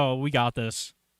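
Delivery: ordinary talk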